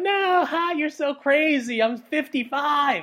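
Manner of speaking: very high, tickled, flattered put-on mother voice. Retelling how a bride's or groom's mother answers their question: imitating a bride's or groom's mother. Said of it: "did you catch that voice?".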